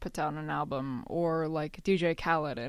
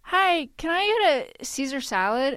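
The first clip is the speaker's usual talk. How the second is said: polite, high, raised voice; 9 semitones higher, 7 dB louder than usual. Acting out Alex ordering at a restaurant: imitating Alex. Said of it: "Pretend to be me at a restaurant ordering food".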